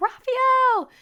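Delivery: piercing, shrill, very high, loud scream. Retelling screaming for husband during the emergency: retelling a scream. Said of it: "And I'm just screaming".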